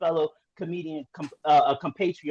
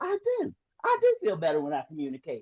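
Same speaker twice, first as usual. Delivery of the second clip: swooping, sing-song, put-on country-style voice. Retelling the speaker's own reply to people urging them to communicate: put-on country voice. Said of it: "I said with that country voice".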